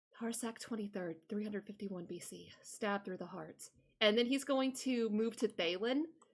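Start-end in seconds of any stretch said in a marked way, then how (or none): 0.2-3.7 very soft, near-silent, very quiet hushed voice. Voicing a character who stares down at another, in a very quiet voice. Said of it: "in a very quiet voice".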